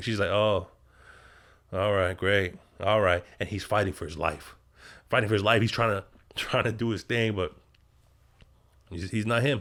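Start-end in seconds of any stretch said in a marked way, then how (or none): 0.3-3.2 put-on bored, lukewarm, flat, unimpressed monotone. Retelling a scene where a woman reacts to her partner: imitating someone unimpressed. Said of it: "she's not feeling anything".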